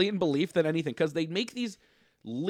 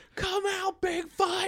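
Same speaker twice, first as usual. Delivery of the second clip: mock yell, much higher; 13 semitones higher than usual. Describing monster hunters walking into the woods, retelling their yell at Bigfoot. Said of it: "They walked into the woods yelling at the monsters".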